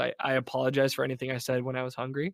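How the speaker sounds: ordinary talk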